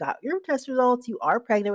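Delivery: put-on light Southern accent, easy lilt. Retelling the nurse practitioner's call with test results: imitating Jamie's Southern accent. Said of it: "with her little Southern accent".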